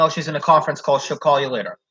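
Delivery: ordinary talk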